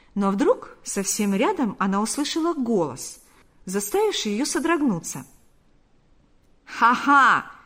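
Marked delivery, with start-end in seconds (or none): 6.7-7.4 loud exclaiming, louder. Close by a woman slipping back among the guests, a man exclaims. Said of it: "воскликнул Панас".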